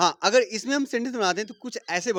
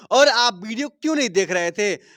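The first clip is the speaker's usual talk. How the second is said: normal talking voice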